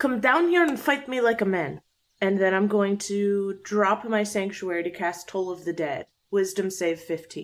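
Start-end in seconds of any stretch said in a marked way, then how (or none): 0.0-1.8 taunting, pitched high, rising upward. Player's character calling up to a floating enemy, yelling a challenge. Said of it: "I'm gonna yell up at Litz".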